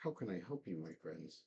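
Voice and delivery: put-on voice of a young elf woman. Game master voices a young elven woman in a pane of glass greeting the players. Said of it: "a young elven woman. And she says".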